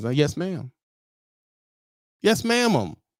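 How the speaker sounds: mock shy, timid, deferential, meek little voice. Retelling answering an older lady who brings him work, acting out timid replies. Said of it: "I'm walking in there all timid and weird".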